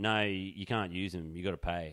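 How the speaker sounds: ordinary talk, nothing marked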